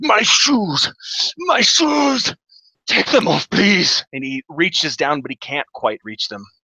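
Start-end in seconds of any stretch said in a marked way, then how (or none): 0.0-4.0 very high, pained, drawn-out, agonized dwarf wail. Voicing a weak dwarf who grabs a player: dwarf screaming in agony. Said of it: "this dwarf screams in agony".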